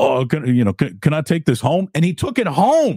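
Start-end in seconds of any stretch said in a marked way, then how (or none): 0.0-1.9 put-on thick, heavy Queens accent. Retelling what a general manager said on seeing a notebook: Chris Mullin's thick Queens accent. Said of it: "in his thick, still, you know, Queens accent".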